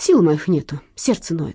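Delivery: plain reading voice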